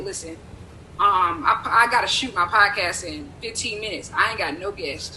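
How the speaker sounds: usual speaking voice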